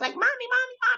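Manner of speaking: tiny, squeaky, very high mouse voice. Recounting how a child's voice changed, the speaker imitates a tiny squeaking call for a parent, in a put-on mouse voice. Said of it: "The little voice went from".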